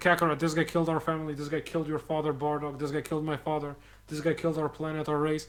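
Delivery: plain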